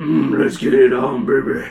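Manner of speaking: low, slow, drawn-out voice. Reading a Star Wars story aloud to friends, voicing Leia: low voice as Leia. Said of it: "her voice low".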